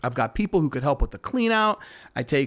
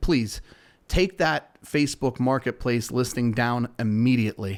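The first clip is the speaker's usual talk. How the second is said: normal talking voice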